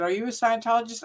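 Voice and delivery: ordinary talk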